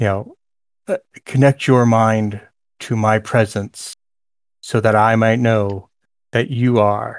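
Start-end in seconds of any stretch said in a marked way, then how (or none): 1.3-7.2 echoing, disembodied, echoey inner voice. Voicing a voice the listener hears in their head during a game: echoey voice in your head. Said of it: "The voice in your head is you know, echoey".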